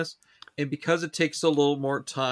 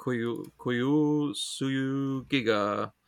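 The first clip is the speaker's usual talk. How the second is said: very slow, halting sounding-out of foreign words. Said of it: "I'm taking too long to s-, pronounce those vowels".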